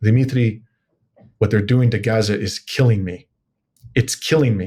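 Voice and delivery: put-on distraught, distressed voice. The speaker retells what a woman told them, imitating a distraught voice. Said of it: "saying in a distraught voice".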